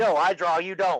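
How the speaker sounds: mild, light half-yell. Retelling how a player acts when playing: imitating someone yelling. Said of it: "yelling at you, like".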